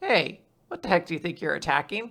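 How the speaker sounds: tiny, small, soft little voice, sounding far off. Voicing a hidden figure calling out to an attacker: little voice. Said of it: "then a little voice says".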